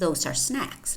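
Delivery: ordinary delivery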